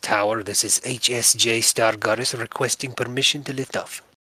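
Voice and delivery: crackly intercom radio voice. Voicing a kobold speaking over the intercoms, crackling intercom voice. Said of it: "the kobold's voice crackle over the your little intercoms".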